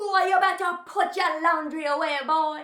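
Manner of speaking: put-on Jamaican accent. Retelling how a boy showed his mom he sounds like Louise: Jamaican accent. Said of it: "practicing Jamaican accents".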